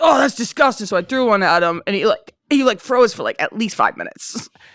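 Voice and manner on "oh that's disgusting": put-on disgusted parent voice. Retelling how her dad reacted to tampons in the living room: imitating her dad. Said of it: "he was like".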